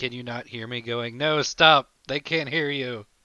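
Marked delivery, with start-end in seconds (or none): 1.2-3.0 imitated loud call, higher and louder. Retelling own call when the audio went out: retelling own shout. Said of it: "trying to shout".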